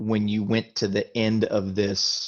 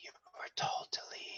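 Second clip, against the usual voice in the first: rushed, breathy, fast whisper, barely audible. Storyteller voicing a voice that calls out to the listener in the dark, in a whisper. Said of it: "you hear a voice that calls out to you in a whisper".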